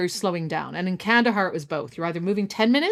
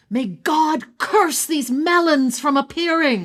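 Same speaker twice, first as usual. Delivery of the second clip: mock fed-up yell, high and raised; 6 semitones higher, 4 dB louder than usual. Telling a story, retelling what their driver shouted out in Dari, imitating a shout. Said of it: "shouts out".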